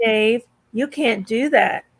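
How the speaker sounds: calm monotone computer voice. Recalling the computer in 2001, doing a HAL 9000 voice. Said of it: "Monotone so creepy".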